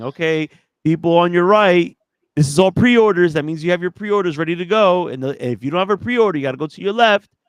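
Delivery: shrill, very loud screaming. Telling about a pre-order line, acting out the store lady: imitating store lady screaming. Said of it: "the Best Buy lady came up screaming".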